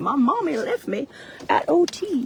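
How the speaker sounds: put-on small child's voice, high, very slow, drawn out. Imagining what Finn would say about being left: imitating Finn. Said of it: "come out and be like".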